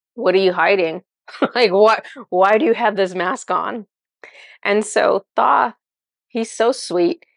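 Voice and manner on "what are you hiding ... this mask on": cheeky, sassy, challenging tone. Retelling own past question to a masked figure: retelling own sassy remark. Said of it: "you can tell I'm in a sassy mood".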